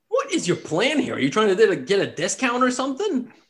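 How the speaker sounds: high, swooping half-goblin character voice. Voicing a half-goblin merchant who greets the group at his stall: half-goblin merchant voice. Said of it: "And he says, and he says".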